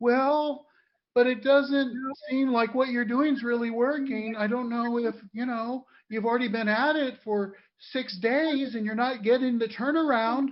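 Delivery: put-on mocking voice. Speaker mimics people pushing them to settle for less, mocking Gerald voice. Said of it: "the voice I use in the accelerator when I'm mocking something".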